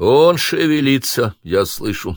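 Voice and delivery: rough, raspy, hoarse voice, slow. An unseen speaker reports that the tied-up captive is stirring, hoarse voice. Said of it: "раздался хриплый голос".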